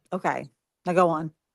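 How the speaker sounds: ordinary delivery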